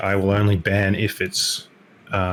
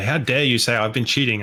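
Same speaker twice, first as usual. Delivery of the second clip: plain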